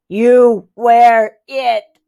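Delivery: loud, flat, eerie mechanical robot voice. Handing the costume to the narrator, he speaks in a creepy robot voice. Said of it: "says in a creepy robot voice".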